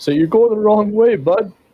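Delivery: very high-pitched, shouted call-out. Retelling a story, speaker acts out yelling at him: retelling a yell. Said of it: "I'm gonna yell at him".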